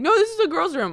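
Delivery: shrill, frantic, panicked yell, pitched very high. Speaker retells yelling at kids who entered the bathroom, retelling her own yell. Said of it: "and meanwhile yelling".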